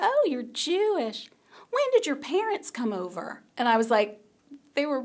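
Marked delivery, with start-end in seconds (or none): 0.0-3.4 put-on broad, heavy Southern accent, sing-song. Recalling what someone said in the speaker's first college year: thick Southern accent. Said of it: "with like a thick Southern accent".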